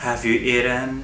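usual speaking voice

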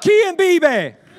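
very loud, high shouted call-out. Leading a crowd in call and response, shouting call. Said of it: "so I'm going to shout out".

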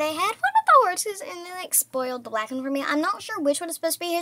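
fast, excited chatter. Streaming a game on the way to Fort Pinta, talking fast, excited. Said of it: "sorry I'm talking fast".

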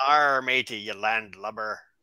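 put-on stock pirate voice and accent. Joking about how everybody does pirates, pirate voice. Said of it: "show us your pirate accent".

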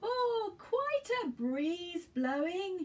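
roaring bellow, pitched way up high. In a read story, Grandfather somersaults over their heads, bellowing. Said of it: "bellowed Grandfather".

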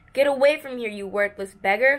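spitting the words out. The fat vendor turns on a pleading old beggar, spitting the words out. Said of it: "the vendor spat out".

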